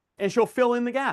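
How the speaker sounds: ordinary delivery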